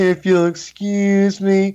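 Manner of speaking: put-on thick, overdone American accent. Retelling how a guy kept saying this, exaggerated American Anakin Skywalker accent. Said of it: "he just had this really exaggerated American accent".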